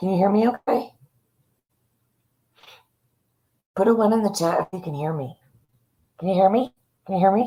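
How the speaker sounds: deliberately muffled voice, as if mouth covered. Asking the chat if they can hear: talking with mouth covered on purpose. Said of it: "I have my whole mouth covered".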